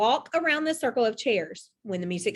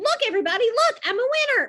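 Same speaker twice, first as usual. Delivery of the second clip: squeaky, very high little voice; 12 semitones higher, 4 dB louder than usual. A narrator reads Max copying Chloe's winning shout, squeaky imitation of Chloe. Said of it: "Max said in a squeaky voice, imitating her".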